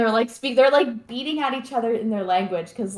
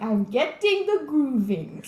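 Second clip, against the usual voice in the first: put-on slow, drawn-out, almost Russian accent; 3 semitones higher than usual. Retelling what Satan tells the real estate agent: imitating Satan, almost Russian accent. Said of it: "almost like a Russian accent".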